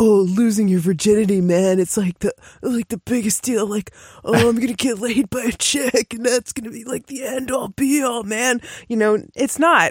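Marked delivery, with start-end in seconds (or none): 0.0-8.6 put-on stock dude-bro way of talking. Acting out a cultural attitude about losing virginity: put-on bro voice. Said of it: "I don't know where that bro voice came from".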